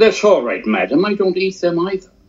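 put-on laid-on, very thick British accent, very high-pitched. Retelling a friend's reply to a waitress: imitating a very thick British accent. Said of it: "he had a very thick British accent".

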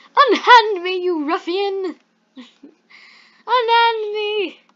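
very high, shrill, loud, dainty pony voice. Going through the characters one by one, the speaker voice-acts Rarity. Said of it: "I'm going to voice act them".

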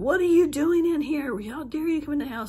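mock shrieked screaming, very high-pitched. Retelling running down the hall after hearing the ex's voice, retelling own screaming. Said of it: "I'm screaming".

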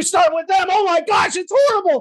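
high, worked-up, intense outburst. Demonstrating how to first match an angry person's state: matching an angry person's energy. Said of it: "they're angry and what's going on".

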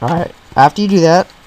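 broken voice cracking in mid-phrase. Walking through a brush-preset tutorial, voice cracking. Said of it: "my voice just cracked".

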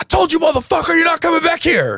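very high-pitched, shrill yell. Retelling how the freshman yelled at the speaker: imitating someone yelling. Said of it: "Now he yells at me".

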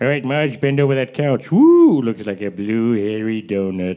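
low, lewd cartoon sitcom husband voice. Acting out a scene from The Simpsons: Simpsons character voice. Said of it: "you're never gonna see The Simpsons in the same way again".

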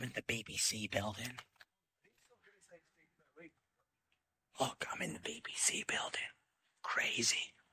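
slow, very quiet, hushed whisper. Inside the BBC building with no one around, whispering. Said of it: "I don't know why I'm whispering".

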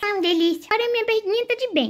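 put-on high-pitched little boy voice.

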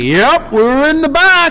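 put-on high, loud shouted child voice.

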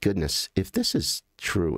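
ordinary delivery

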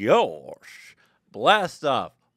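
very loud, swooping cartoon character voice, belted. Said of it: "I just did a little impression of Goofy there".

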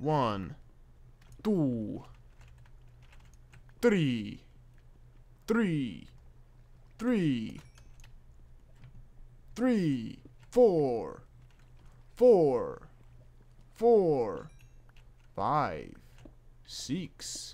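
very slow vampire voice with swooping pitch. Counting up the diamonds found while recording a video, in a vampire voice. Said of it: "I sound like the vampire from MMO".

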